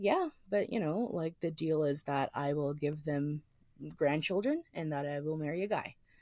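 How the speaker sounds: peaceful, accepting, calm, soft, matter-of-fact tone. Retelling what a friend answered about her parents: imitating a calm, matter-of-fact tone. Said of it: "she said it in this, like, very calm".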